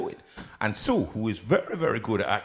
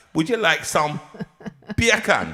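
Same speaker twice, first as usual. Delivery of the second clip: loud, high, put-on Jamaican accent, bacon as beer can; 7 semitones higher, 7 dB louder than usual. Running a training course in speaking Jamaican, the speaker demonstrates a Jamaican accent. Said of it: "training course in speaking Jamaican".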